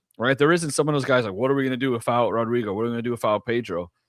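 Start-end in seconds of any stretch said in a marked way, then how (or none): none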